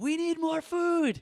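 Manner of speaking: very high, loud, carrying, drawn-out yell. Retelling a deaconess calling out to the kitchen: imitating someone yelling. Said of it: "yells out to the kitchen".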